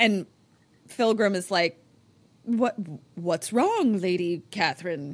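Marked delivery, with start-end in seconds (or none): 2.4-5.1 put-on old-fashioned pilgrim voice. Recapping a show scene, Philgram asking Catherine what's wrong, pilgrim voice. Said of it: "in her pilgrim voice".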